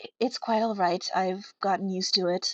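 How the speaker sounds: hushed, quiet whisper. Player voices her character whispering back after being given advice. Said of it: "as she whispers back".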